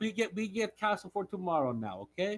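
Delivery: put-on Russian-accented voice. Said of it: "you're making Wade sound like he's Russian".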